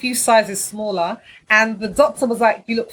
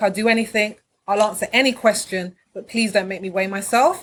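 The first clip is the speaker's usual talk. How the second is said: ordinary talk, nothing marked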